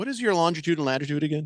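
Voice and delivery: put-on very serious voice. Retelling how a man answered the speaker's jokes, imitating a very serious voice. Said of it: "in a very serious voice say".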